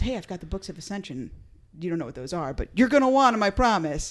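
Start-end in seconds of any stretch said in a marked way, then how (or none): none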